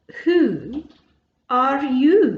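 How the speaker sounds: drowsy, languid, sleepy voice. Narrator reading the Caterpillar speaking to Alice, in a languid, sleepy Caterpillar voice. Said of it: "addressed her in a languid, sleepy voice".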